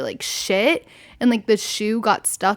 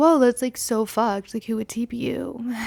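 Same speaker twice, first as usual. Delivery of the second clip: mock innocent, playing-dumb tone. Retelling her reply after his house was TP'd: imitating herself playing stupid. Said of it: "Playing stupid".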